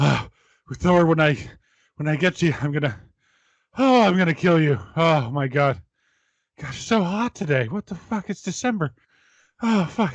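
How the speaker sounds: acted worn-out voice. Acting out a man talking while walking for so long, imitating someone tired. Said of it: "he was walking for so long he was getting tired".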